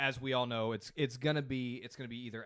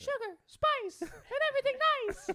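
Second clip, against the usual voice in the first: put-on very high, loud, tiny cartoon girl voice; 5 dB louder than usual. Asked for a Powerpuff Girl impersonation, giving it a go: Powerpuff Girls impersonation. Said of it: "That was a little Mickey Mouse".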